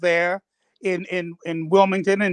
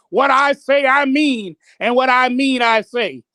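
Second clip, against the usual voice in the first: acted-out high, slow, scolding yell talking down; 5 semitones higher, 4 dB louder than usual. Retelling how he yelled at meeting members like children: imitating someone yelling. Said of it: "yelled at him as though they were children".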